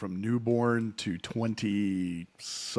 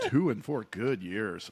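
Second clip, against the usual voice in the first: dry, sarcastic tone. Repeating one's own earlier remark about toddler years: sarcastic tone. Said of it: "Did you not hear the sarcasm?".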